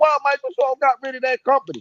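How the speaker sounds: high, whiny, indignant, complaining outcry. Mocking gamers who complained about Microsoft, imitating people screaming. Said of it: "the same motherfucker that was screaming".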